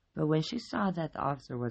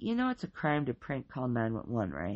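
ordinary delivery, nothing marked

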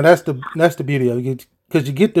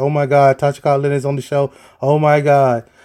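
put-on starstruck, excited voice. Imagining a wife's reaction to the guest, imitating starstruck excitement. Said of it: "my wife is probably shaking right now 'cause she's like".

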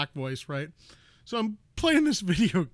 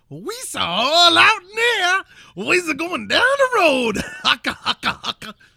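very high, very loud mock caricature voice; 12 semitones higher, 10 dB louder than usual. Urged to go fully stereotypical, the speaker does a 1920s minstrel stereotype voice. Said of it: "you got to go full twenty sambo on it".

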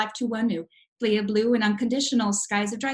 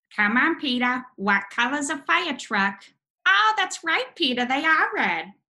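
cartoon mom voice with widely swinging pitch; 3 semitones higher than usual. Challenged to prove it right now, the speaker does the voice: Lois Griffin voice. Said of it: "I can do the voice of Lois Griffin from Family Guy".

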